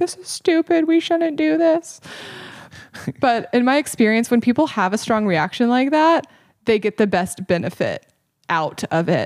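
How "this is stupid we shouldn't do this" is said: mock shrill angry shouting, very high-pitched and heated. Retelling an angry moment during a course, retelling yelling at the instructor. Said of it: "I was like yelling at her".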